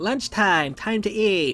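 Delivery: irritating, annoying put-on girl voice. Voicing her line as lunchtime begins in the story: her voice, loud and annoying. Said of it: "making myself more loud and annoying than usual".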